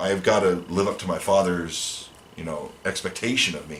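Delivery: ordinary talk, nothing marked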